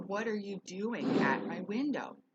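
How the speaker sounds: defensive, upset yelling, loud and drawn out. Retelling confronting someone at the window: retelling yelling at someone. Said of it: "I started yelling".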